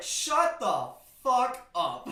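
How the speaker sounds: mock loud, very slow, drawn-out delivery. Retelling telling off a man who called them racist: imitating angry yelling. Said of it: "I turn to him and bitch him out".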